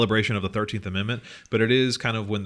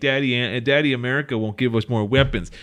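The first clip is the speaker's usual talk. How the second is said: put-on whining, higher pitch; 3 semitones higher, 4 dB louder than usual. Mocking a politician's social media video, mock-whining as Netanyahu. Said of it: "he released this like video just whining".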